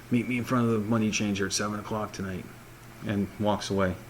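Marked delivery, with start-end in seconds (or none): 0.1-2.4 secretive, hushed half-whisper, stage whisper. Voicing the orc guard telling a player where to meet: half-whispering. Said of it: "he whispers to um".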